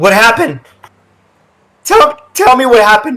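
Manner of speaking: cracking, breaking voice, very high and swooping. After a casualty is reported, the captain asks what happened, voice cracking. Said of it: "Captain, / She jumps into the water and begins to walk up. / Captain, / As her voice cracks".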